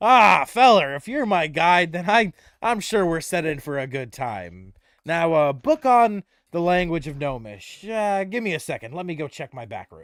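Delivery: loud delivery, talking through a chuckle. Voicing Barthen talking to the group, chuckling. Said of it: "He starts slapping his knee, chuckling".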